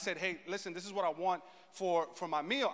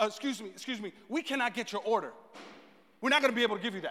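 mock frantic, panicky lady voice; 3 semitones higher than usual. Pastor retelling a food order mishap, imitating a frantic lady. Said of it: "she comes a little frantic".

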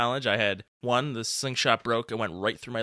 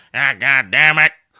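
very loud, abruptly blurted exclamation; 3 semitones higher, 14 dB louder than usual. Retelling a friend's catchphrase: imitating Greg's catchphrase. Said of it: "Greg's catchphrase is".

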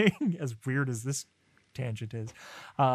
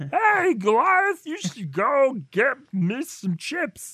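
very high, loud, swooping, badly done cartoon voice; 12 semitones higher, 7 dB louder than usual. Joking about a terrible Xanatos impression by addressing Goliath, sounding like Barney from The Simpsons. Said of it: "I sound like Barney from The Simpsons".

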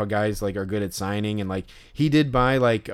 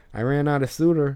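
put-on voice, pitched higher; 4 semitones higher than usual. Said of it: "his slight, like, Chicago accent".

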